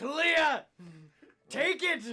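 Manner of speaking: very high, very loud, shrill yelling. Yelling out into the darkness to Kalia in character: yelling into the darkness. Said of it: "I'm yelling out into the darkness".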